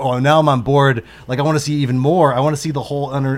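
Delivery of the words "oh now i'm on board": usual speaking voice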